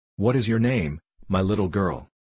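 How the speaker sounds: ordinary delivery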